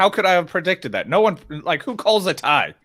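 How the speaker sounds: ordinary talk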